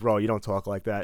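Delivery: plain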